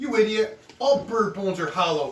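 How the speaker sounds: loud, pissed-off rant. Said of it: "He got all pissed off".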